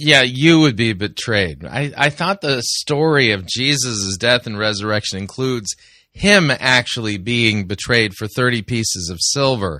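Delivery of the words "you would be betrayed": YOU stressed and said slowly. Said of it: "You put the emphasis totally on the wrong syllable".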